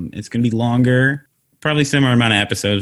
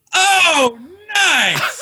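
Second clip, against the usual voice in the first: very high, amazed, impressed exclamation. Imitating a viewer watching the show for the first time: imitating an amazed viewer. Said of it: "a shot of people reacting to it".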